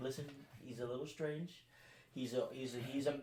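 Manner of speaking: hushed, very quiet, barely audible half-whisper. Explaining to her about the man in armor as he approaches, half-whispering. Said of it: "I'm like whispering to her here".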